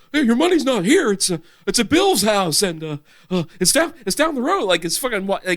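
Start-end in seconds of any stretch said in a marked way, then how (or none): 0.1-4.6 put-on old-Hollywood movie-star drawl. Imitating an actor doing an impersonation: Nicolas Cage doing Jimmy Stewart. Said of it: "Nicolas Cage do a fucking Jimmy Stewart impersonation".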